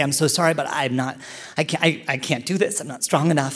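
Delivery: put-on panicked hyperventilating, desperate pleading tone. Retelling telling Biff during childbirth, imitating panicked hyperventilating. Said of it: "hyperventilating, panicking".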